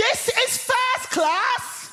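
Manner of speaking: shrill, loud, high, indignant shout at top of voice. Retelling a woman in a first class carriage shouting at them, retelling a shout at full volume. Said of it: "at the top of her voice, she shouts".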